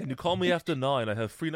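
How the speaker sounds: failed attempt at a British accent. Joking about Star Wars characters and cell phones, trying a voice: attempted Obi-Wan accent. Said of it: "I was trying to do an Obi-Wan accent".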